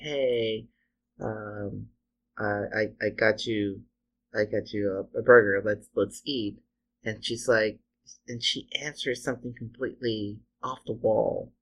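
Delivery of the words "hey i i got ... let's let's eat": ordinary talk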